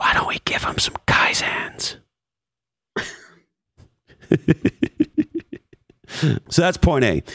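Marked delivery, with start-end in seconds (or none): 0.0-2.0 soft, voiceless whisper, very close. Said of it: "Gary whispers in my ear".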